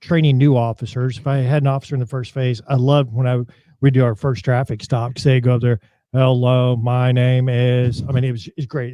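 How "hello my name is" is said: flat, mechanical robot voice, delivered very slowly. A police trainer imitates new officers at their first traffic stop: robot-like voice imitation. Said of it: "It's like a robot".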